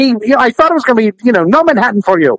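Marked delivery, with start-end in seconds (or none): 1.4-2.4 stern, curt put-on voice. Joking that the bartender would refuse service: Soup Nazi impression. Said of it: "like Manhattan Nazi instead of soup Nazi".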